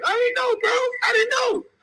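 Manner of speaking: shrill, very high screaming, pleading tone. Retelling a fight where the other man begged: imitating someone screaming.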